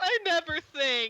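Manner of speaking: bursting into high, loud tearful sobs. Telling the story, the fridge bursts into tears and says this, crying. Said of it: "the fridge bursts into tears and says".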